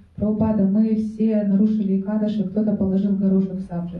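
plain

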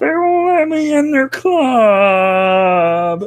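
very high loud squeaky puppet voice, "club" drawn out. Acting out a character's grandfather, in an Ernie from Sesame Street voice. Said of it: "You sound like Ernie from Sesame Street".

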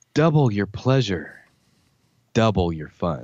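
put-on sultry, pseudo-seductive voice. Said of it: "I'm going to read these in a pseudo seductive voice".

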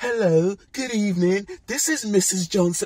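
very high, polite put-on telephone voice. Describing how a mum answers the phone, acting out her telephone voice. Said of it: "that's a telephone voice".

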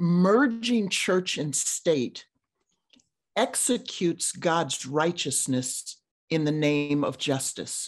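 slow, deliberate phrasing, every word spaced out. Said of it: "I'm trying to say that slowly so you can hear the play on words".

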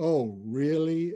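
mock world-weary, very weary, urbane tone. Trying to recall what a woman said, imitating her very weary tone. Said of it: "she very wearily said something like".

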